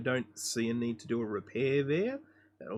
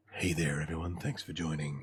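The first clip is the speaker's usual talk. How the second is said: very low, deep late-night radio DJ voice; 7 semitones lower, 3 dB quieter than usual. While narrating a repair video, trying out another narration style: late-night radio host voice. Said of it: "we could do it like sort of uh, late night radio".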